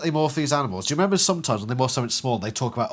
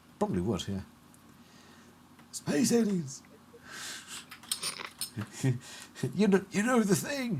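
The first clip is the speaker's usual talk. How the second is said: put-on soft, pitched-up generic old man voice; 5 semitones higher, 8 dB quieter than usual. Chatting with others about Animorphs and Uncle Joe: generic old man voice. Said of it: "just my generic old man voice".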